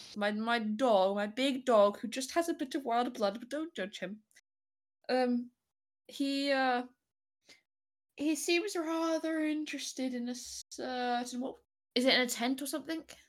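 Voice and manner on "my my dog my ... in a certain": put-on acted disguised old man voice. Speaking in character as an old man to the others: put-on old man voice. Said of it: "therefore I must do a voice".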